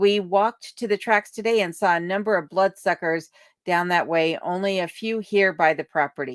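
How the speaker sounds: ordinary talk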